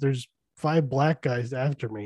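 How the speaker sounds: normal talking voice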